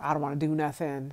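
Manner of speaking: normal talking voice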